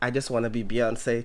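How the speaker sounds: normal talking voice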